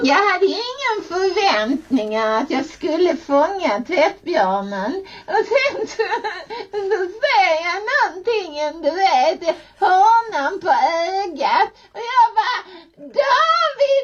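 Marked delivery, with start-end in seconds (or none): 11.9-14.0 acted-out shout, higher. Retelling spotting something from the corner of the eye, retelling a shout. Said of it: "skrek jag".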